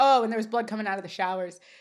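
normal talking voice

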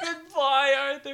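pretend crying. Retelling an episode scene, she says goodbye to Arthur, mock sobbing. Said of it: "starts sobbing".

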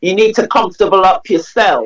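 put-on Caribbean, West Indian accent. Quoting mum's advice to make yourself comfortable, in a West Indian accent. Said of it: "or in a West Indian accent".

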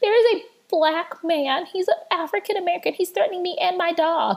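very high, helpless, pleading damsel-in-distress voice. Act out a woman calling the police who completely changes her voice, imitating a damsel in distress. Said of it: "goes into this damsel in distress".

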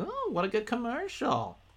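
high, mock impressed gushing.

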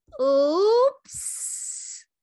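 very high, hissing little voice. The snake lets Elizabeth go and slithers away into the mud, hissed. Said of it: "the snake hissed".

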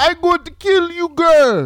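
put-on very high, loud Jamaican accent. Acting out a man's reaction in a story being told, jamaican voice. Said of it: "That's my Jamaican voice".

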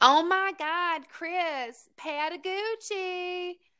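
very high, slow, squeaky voice. Retelling a voice overheard at a bar, mock-condescending Minnie Mouse voice. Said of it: "this really annoying, like, condescending Minnie Mouse bitchy voice go".

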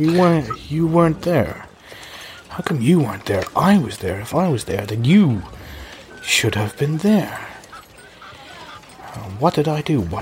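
mumbled character voice. Yorick, badly injured, speaks to Luke with an empty look, mumbling to himself. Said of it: "as he's mumbling to himself".

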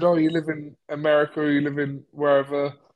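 normal talking voice

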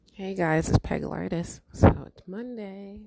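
very loud, groggy, sleepy just-woke-up voice. Speaker greeting the viewers on a Monday after just waking up, sleepy, just woke up. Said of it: "I still sound a bit sleepy because I just woke up".

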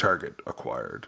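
very low, creaky, mechanical robot voice. Narrating a game where three heads speak in unison to the player, very robotic voice. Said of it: "in a very robotic voice".

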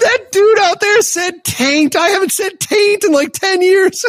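amused, high, slow impression.

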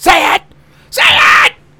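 shrill, booming, very loud, dragged-out shrieking yell. Retelling what they wanted to say to a cautious manager: Sam Kinison yell. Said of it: "like Sam Kinison".

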